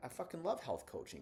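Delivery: brisk, fast, high, confident, determined, full of drive. Acting out how a coach would be expected to sound about health coaching; fast, confident, energetic. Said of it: "speaking with confidence and I'm speaking with determination and I'm speaking relatively fastly".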